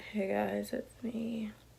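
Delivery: quiet, dead-level, flat droning monotone. Trying out a monotone intro for a review video, monotone. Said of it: "What if I did it so monotone?".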